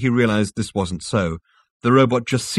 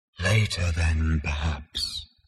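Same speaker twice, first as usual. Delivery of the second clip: murmured, lower and quieter; 4 semitones lower, 6 dB quieter than usual. An unseen voice answers a panting man's questions, murmuring. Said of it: "murmured the voice".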